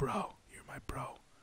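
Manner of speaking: hushed, breathy whisper under the breath. Acting out two characters calling each other bro: whispering.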